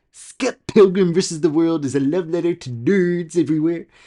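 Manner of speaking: put-on geeky, nerdy cartoon-style character voice. Reviewing the movie Scott Pilgrim versus the World, in a Comic Book Guy voice. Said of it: "it does sound like the comic book guy".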